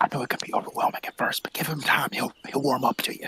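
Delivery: hushed, quiet whisper. Voicing a character reassuring another about a newcomer: whispering. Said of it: "I just whisper to him".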